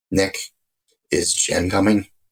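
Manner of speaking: put-on quiet, soft voice. Retelling how a grieving mother asked a question: imitating mother's quiet soft voice. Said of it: "her voice is just so quiet and soft".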